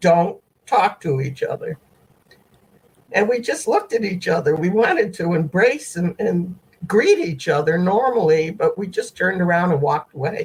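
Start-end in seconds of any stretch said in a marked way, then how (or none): 0.0-1.8 mock firm, unbending delivery. Retelling a message telling them not to talk: imitating a very firm order. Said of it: "It was very firm".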